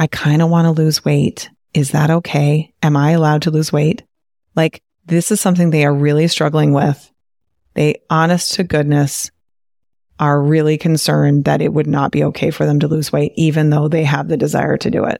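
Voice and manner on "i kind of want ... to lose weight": put-on near whisper, lower in pitch. Retelling how women asked a coach a question: imitating someone almost whispering. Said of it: "but almost whispering".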